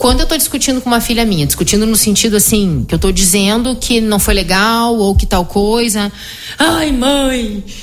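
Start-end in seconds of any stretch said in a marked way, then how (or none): 6.6-7.6 mock-tearful put-on crying, higher pitch. A mother retelling an argument where her daughter leaves: imitating a crying daughter. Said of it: "E sai chorando".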